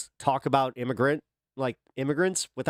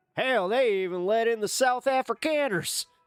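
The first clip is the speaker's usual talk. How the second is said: put-on American southern accent, pitched up; 9 semitones higher than usual. Saying the remark again, now in a put-on southern accent. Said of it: "a like a southern accent".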